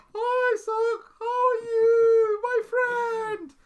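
very high, very slow, loud, drawn-out, high-energy voice. Speaker recalls how their old self greeted people; imitating own loud old self. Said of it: "I was really loud".

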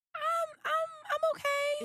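squeaky, very high, very drawn-out voice. Answering how they feel today: high-pitched voice. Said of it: "It's the high pitch".

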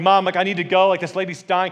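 loud, high, frightened yell. Retelling yelling at mom in the front of a plane: imitating own past yelling. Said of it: "I'm yelling at my mom in the front".

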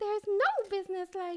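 mouse-like squeaky voice. Showing that a good one can actually be done: Minnie Mouse voice. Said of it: "you can actually do a good Minnie Mouse".

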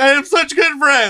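very high, loud, blubbering ugly-crying wail. Retelling answering a guy who asked what happened, imitating ugly crying. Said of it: "I was just ugly crying".

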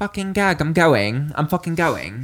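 put-on West London accent, loud and high. Hearing a favourite play is in cinemas, the speaker does a West Londoner impression. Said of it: "It's my fucking West Londoner impression".

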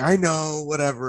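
high, tearful, weepy crying voice, acted out. Quoting his girlfriend, caught crying when he walks in: imitating her crying. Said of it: "she's crying, she's got like tissue".

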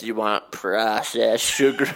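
loud lunch lady calling voice. Speaker repeats a phrase from a friend's update in a lunch lady voice. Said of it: "Sound like a lunch lady".

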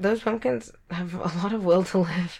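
talking while cracking up, laughing through words. Joking with another speaker about long-lasting pumpkins, laughing while talking. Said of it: "I couldn't say that without laughing".

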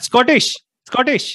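high, loud Indian accent.

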